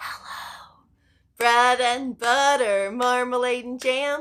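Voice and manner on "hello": whisper, as quiet as possible. Leading a group hello game, the speaker says hello: very quiet. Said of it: "Let's say hello as quiet as we can".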